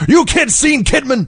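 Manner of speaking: play-acted shouting, as angry as possible, pitched high. Retelling how Hogan asks a table of kids: imitating Hulk Hogan shouting angrily. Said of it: "he just shouts as angrily as he can".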